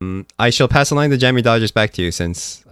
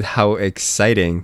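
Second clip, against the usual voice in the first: ordinary delivery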